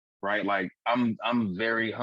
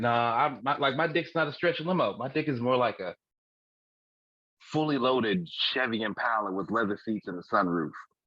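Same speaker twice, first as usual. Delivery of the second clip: ordinary talk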